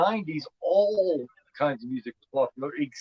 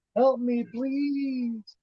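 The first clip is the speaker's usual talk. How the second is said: put-on high, eerie, creepy little kid voice; 9 semitones higher than usual. Speaker describes a killer who could do a child's voice; creepy little kid voice. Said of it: "The way she's able to do that little kid voice".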